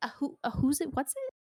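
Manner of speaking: high voice, slightly stuttering, stumbling over words. Voicing a shopkeeper who has never seen this animal before, slight stutter. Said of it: "she stutters a little bit".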